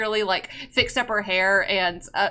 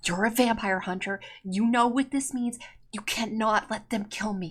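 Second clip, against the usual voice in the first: very soft, close, hushed murmur; 8 dB quieter than usual. A wounded woman speaks to a vampire hunter, in a very quiet voice. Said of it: "she like says in a very quiet voice".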